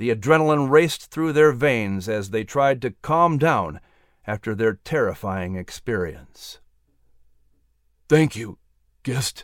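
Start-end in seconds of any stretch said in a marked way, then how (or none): 8.1-9.4 said on a gasp. Just pulled onto a raft from an icy river, thanking his rescuer, gasping. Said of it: "George gasped".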